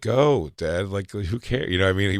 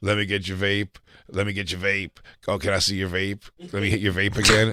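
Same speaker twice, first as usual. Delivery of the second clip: casual, friendly, buddy-like way of talking. Retelling a friend's impression of another friend: Josh's Justin impression. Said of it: "a Justin impression".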